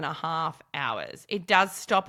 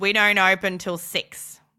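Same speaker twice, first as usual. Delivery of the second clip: bad, over-the-top put-on Australian accent; 5 dB louder than usual. Quoting the gentleman who answered the doorbell: exaggerated Australian accent. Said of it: "that very awful Australian accent that I just dropped for you".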